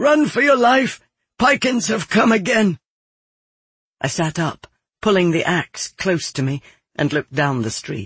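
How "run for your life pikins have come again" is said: high-pitched, loud shout. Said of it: "he shouted at me".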